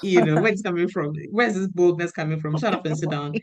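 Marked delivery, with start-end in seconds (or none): none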